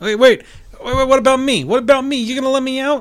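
put-on Boston accent. A player voices Peeper, left behind in the cage, Peeper in Boston accent. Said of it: "Why'd you suddenly come from Boston?".

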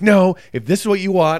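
acted-out high, agitated, heated, worked-up tone. Retelling his reply to a woman telling him to calm down, retelling being worked up. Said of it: "sir, calm down".

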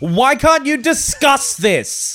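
very high shouting. Retelling shouting at the screen while watching: imitating own shout. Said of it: "I was just shouting at the screen".

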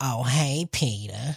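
low, sexy cartoon voice. Showing how a Sexy Lois voice would go: Sexy Lois voice. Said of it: "I wanted to do Sexy Lois".

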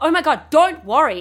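high, loud, panicked, blurted outburst.

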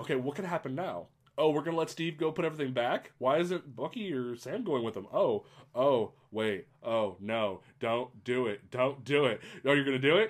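ordinary talk

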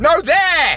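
very high, urgent shout. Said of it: "Stop shouting at me".

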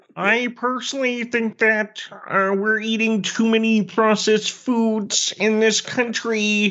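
high, slow, mocking lecturing man's voice.

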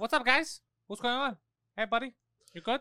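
cocky tough-guy voice. Teasing a friend about his father, imitating the dad greeting people. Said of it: "He's like this".

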